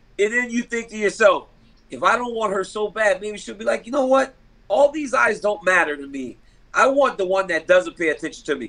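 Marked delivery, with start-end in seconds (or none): none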